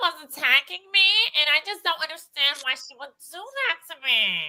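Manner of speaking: nasal voice, as if holding the nose. Speaker showing how Brit talks, imitating Brit. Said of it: "Brit literally talks like this".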